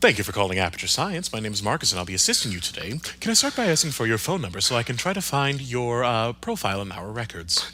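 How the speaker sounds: polished, professional customer-service phone voice. Showing a code switch after asking for a fake company name: code-switched customer service voice. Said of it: "my code switch going from me talking kinda like this on the podcast to switching up to".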